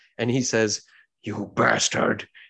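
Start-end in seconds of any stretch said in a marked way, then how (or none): 1.2-2.2 grunting under strangled breath. Voicing a foe being strangled by his own hand: grunting under strangled breath. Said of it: "he grunts under his own strangled breath".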